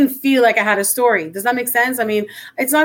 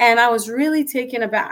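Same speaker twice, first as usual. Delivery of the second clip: ordinary talk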